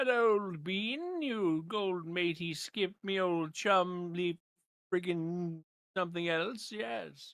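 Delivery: put-on very slow, old-fashioned, posh British accent. Joking around with friends in a put-on british voice. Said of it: "that's a good voice".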